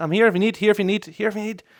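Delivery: mock, high-pitched shouting call, repeated over and over. Retelling calling for the ball as goalkeeper: imitating own shouting. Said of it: "I was shouting my head off".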